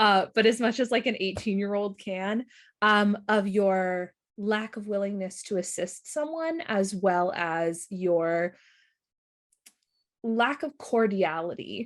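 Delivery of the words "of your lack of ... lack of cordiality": earnest, slow, would-be professional tone. Voicing Fleur speaking to Agent Lotha: trying to sound professional. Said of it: "she's trying to sound professional".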